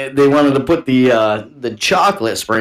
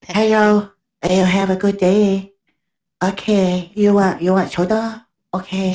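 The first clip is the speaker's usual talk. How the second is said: gentle, pitched-up, polite server-style voice; 8 semitones higher than usual. Imitating restaurant staff offering drinks at the table: imitating a gentle server voice. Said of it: "It's so gentle".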